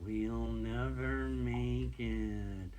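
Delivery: slow, drawn-out, doom-laden pessimist tone.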